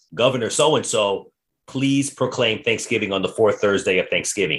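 ordinary talk

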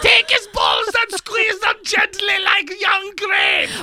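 put-on Austrian accent, high pitched and swooping. Discussing someone's accent, the speaker quotes a line in a put-on austrian accent. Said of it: "I think it was Austrian".

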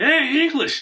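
acted, very high, loud jeering. Telling a story about a loud guy heckling a band in a bar, imitating a loud bar heckler. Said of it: "He's a loud, asshole in the bar".

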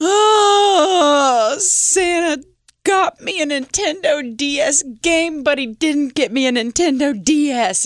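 put-on high, slow, heartbroken child's wail. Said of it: "He's wailing".

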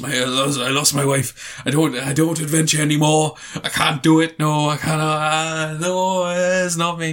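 put-on Welsh accent. Retelling a story, speaker acts out what he said to the little girl: Welsh accent. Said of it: "That's kind of his Welsh accent".

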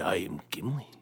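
low, whispered voice. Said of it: "you sound like Sidious".

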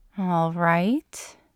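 tentative, hesitant, unsure. Answering Mulder after he tells her to back up, tentative. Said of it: "she responded tentatively".

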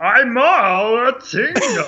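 stretched out, high-pitched and loud. Doing the Looney Tunes Martian guy: Looney Tunes Martian guy voice. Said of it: "The Martian guy?".

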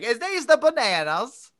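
high, loud, fake Australian accent. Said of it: "pretend to have an Australian accent".

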